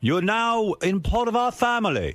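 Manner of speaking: very high, slow, put-on British accent. Retelling what the guy in charge said at the judges dinner, in [name]'s British accent. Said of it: "that's your British accent".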